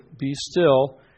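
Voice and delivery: ordinary talk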